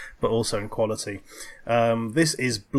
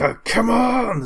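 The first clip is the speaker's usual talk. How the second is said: very high, loud, tense yell in cinematic style; 11 semitones higher, 5 dB louder than usual. Recounting a tense cinematic moment where a man yells; retelling a yell. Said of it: "he just yells like".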